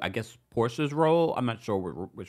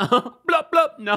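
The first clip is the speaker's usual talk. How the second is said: put-on Jamaican accent, very high and very loud; 13 semitones higher, 9 dB louder than usual. Imitating a departing cast member's reply; Jamaican accent impression. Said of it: "She'll say in a Jamaican accent".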